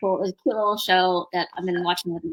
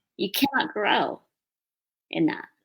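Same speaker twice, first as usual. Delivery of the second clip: put-on sweet small voice, quieter; 4 dB quieter than usual. Retelling what an inner voice said that made the speaker cry: imitating a sweet little voice. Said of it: "the sweet little voice that said".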